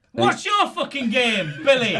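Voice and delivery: confrontational, aggressive, hostile, in-your-face tone. Redoing a scene line after being told to toughen up, aggressive. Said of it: "a bit more aggression".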